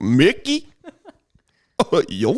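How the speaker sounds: swooping cartoon voice with southern accent. Asked to show off his Goofy impression, the speaker does it: Southern Goofy voice. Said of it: "Why does yours sound like Goofy if he was in the deep south?".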